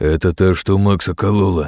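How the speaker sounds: low growled voice. Reading a novel, the narrator gives the cat's line, growling. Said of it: "прорычал кот".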